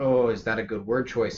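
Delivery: ordinary talk, nothing marked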